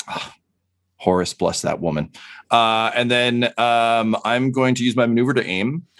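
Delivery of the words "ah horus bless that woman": low, muttered aside under the breath. Voicing a character relieved that Sister Mina stepped in: muttering under his breath. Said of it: "he just mutters under his breath".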